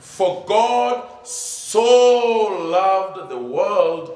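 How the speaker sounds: heavy emphasis on the word "so". Quoting John three sixteen to point out a key word: stress on 'so'. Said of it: "I even emphasized it when I was quoting it".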